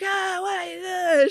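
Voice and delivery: acted very high yell, "wait" stretched long. Retelling a low flight, imitating someone shouting at the front. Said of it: "shouting at the front".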